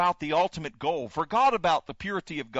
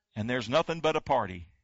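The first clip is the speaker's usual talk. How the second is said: normal talking voice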